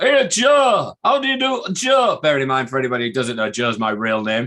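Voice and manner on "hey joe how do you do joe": very high, very slow, loud and drawn-out voice. Greeting Joe by his real name, imitating the speaker's dad. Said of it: "That's me doing an impression of my dad".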